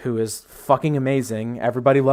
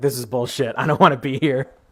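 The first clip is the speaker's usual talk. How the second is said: mock dry, completely flat, expressionless deadpan. Speaker describes an anime character amid everyone else freaking out: retelling a deadpan line. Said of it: "just like completely deadpan".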